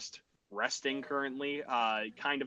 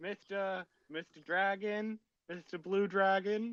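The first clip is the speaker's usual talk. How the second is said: mild, high, drawn-out calling yell; 7 semitones higher than usual. In a scene, a character calls down to a dragon, yelling down a little. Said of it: "And Joju yells down a little bit".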